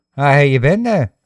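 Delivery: put-on Australian accent, loud and high. Acting out a chat with an Australian alter ego: Australian accent. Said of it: "He's Australian".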